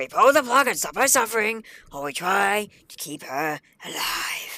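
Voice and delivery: put-on loud, high-pitched cartoon character voice. Speaker acting out a scene between two characters, cartoon character impression. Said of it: "my best impression of them from the Bridge series".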